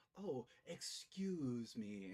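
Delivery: sarcastic politeness. Voicing a young character answering a stranger's greeting: sarcastic. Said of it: "a sarcastic bow".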